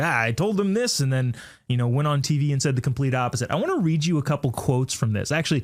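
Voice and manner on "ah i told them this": ordinary talk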